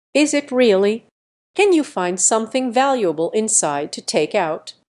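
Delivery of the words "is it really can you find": plain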